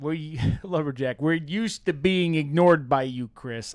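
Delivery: loud, put-on South Chicago accent. Voicing Lumberjack's chat message to Chris, Lumberjack's South Chicago voice. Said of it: "that South Chicago voice now".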